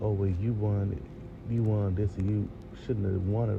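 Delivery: plain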